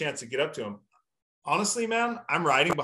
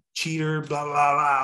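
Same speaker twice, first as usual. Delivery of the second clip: put-on yelling; 4 dB louder than usual. Retelling yelling at a rival rider under the stands: imitating own past yelling. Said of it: "I'm just yelling".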